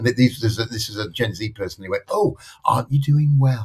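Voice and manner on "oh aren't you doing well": mock condescending, sweetly impressed, patronizing tone. Retelling what a Gen Z coworker said: imitating a patronizing tone. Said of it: "the first time I've been patronized".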